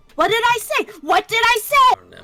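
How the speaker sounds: very loud, very high, shrill in-character shout. Warning the party in character that the enemy has backup: shouting in character. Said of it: "I am also shouting".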